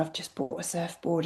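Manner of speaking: very soft, hushed, confiding whisper. Retelling what was said to a friend at a birthday dinner: imitating own whisper. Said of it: "I sort of whispered to my friend".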